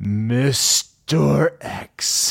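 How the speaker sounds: high-pitched, creepy, spooky announcer voice. Reading donor names for a Halloween shoutout segment: creepy spooky announcer voice. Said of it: "as the creepy announcer guy".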